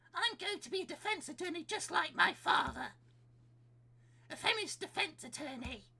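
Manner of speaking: rough put-on young boy voice. Voicing young Miles from the game's dialogue: Miles' rough voice.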